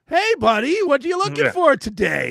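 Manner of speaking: very high, booming, shrill fake-cheery salesman voice. Retelling a car dealer walking over, imitating a salesman's fake cheer. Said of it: "pretending he's happy to see me".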